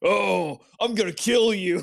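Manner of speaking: gruff, gravelly put-on voice. Imitating how he usually talks to the speaker, in a gravelly, gruff voice. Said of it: "gravelly, gruff and gravelly".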